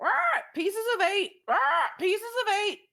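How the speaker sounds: shrill, loud, squawking pirate parrot voice. Voicing a parrot that wakes as players enter: squawking parrot voice. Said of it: "the parrot, uh, starts going".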